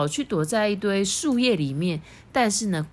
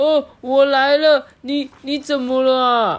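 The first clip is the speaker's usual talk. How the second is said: high, loud, anxious, nervous shout; 5 semitones higher, 7 dB louder than usual. Narrator reading the bear rushing toward cries of pain, nervous shout. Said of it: "吉比大熊紧张的大叫说".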